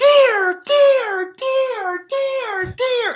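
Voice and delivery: very high, very slow, full-volume, drawn-out bellowing screams. Holding his bow, retelling screaming as loud as he could. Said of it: "as loud as I can scream".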